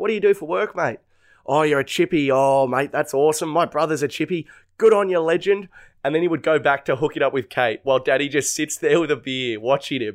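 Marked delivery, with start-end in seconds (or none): 0.0-5.7 play-acted patronising man's chummy, matey chatter. Retelling how an older bloke chatted to a mate: imitating a condescending bloke. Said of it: "condescending conversation".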